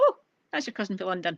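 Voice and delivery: ordinary talk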